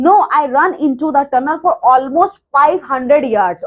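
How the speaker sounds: ordinary delivery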